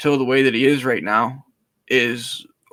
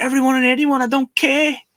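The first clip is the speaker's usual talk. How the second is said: very high, all-out screaming; 12 semitones higher than usual. Retelling a fighter's answer on the mic: imitating a screaming fighter. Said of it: "And he's just screaming".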